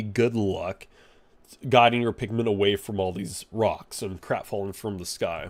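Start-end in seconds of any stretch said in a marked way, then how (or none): none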